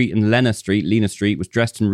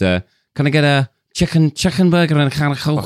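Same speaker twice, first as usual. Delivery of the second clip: Liverpudlian Scouse accent; 4 semitones higher than usual. Demonstrating a food order for American listeners, Scouse accent. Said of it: "I can do a food order in Scouse".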